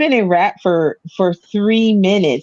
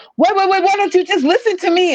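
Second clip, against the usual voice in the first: put-on, pitched-up yelling; 12 semitones higher than usual. Retelling a car insurance call, the speaker imitates the caller yelling. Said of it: "who are you yelling at?".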